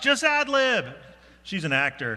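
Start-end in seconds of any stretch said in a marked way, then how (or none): 0.0-0.9 high, loud voice calling out across a room. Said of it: "[name] yells out".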